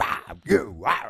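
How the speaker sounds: very loud, bellowing monstrous roar. Retelling how a character sounds when back to his other voice: Frankfurter voice. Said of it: "Frankfurter voice".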